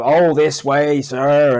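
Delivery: over-the-top sarcasm, drawn out, slow and loud. Retelling a game character's meth lab mission: over-the-top Trevor impression. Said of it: "the way he's just over the top with them".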